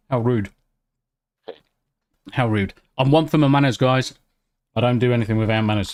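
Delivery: speaking with mouth full, chewing. Eating custard creams while talking to the others: talking with mouth full. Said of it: "talking with my mouth full".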